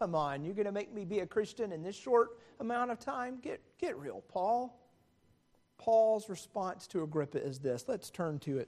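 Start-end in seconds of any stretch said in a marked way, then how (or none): 0.0-4.7 derisive, mocking tone. Retelling Agrippa's answer to Paul, acting out Agrippa's mocking reply. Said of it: "responds with a mocking tone".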